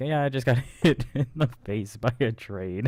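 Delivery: breezy, nonchalant, super casual, offhand throwaway delivery. Retelling a remark about getting hit by a train: imitating a super casual tone. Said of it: "You said that super casual".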